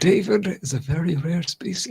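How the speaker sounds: documentary-narrator voice pitched very high. Doing a nature narrator line about David: David Attenborough voice. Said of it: "I'm at Attenborough".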